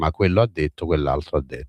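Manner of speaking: plain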